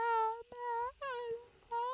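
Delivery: very high, hushed, choked and strangled weak scream. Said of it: "a little's coming out".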